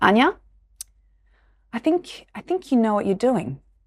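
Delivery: put-on heavy Eastern European accent. Quoting the speaker's dad in the office, strong eastern european accent. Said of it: "obviously very strong Eastern European accent".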